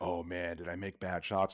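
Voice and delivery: anxious, unsure, soft, nervous fretting. Retelling what he said while they searched for blood, imitating a nervous man. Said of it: "he's getting all nervous".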